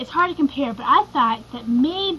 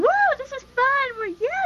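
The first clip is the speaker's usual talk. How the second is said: put-on wild, very high screaming whoop; 14 semitones higher than usual. Telling Sarah about when they were lost and a truck pulled up: imitating Sarah screaming. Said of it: "you of course start screaming".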